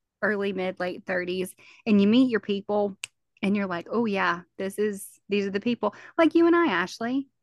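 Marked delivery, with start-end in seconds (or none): none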